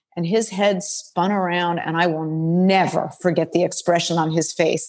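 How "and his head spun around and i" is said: plain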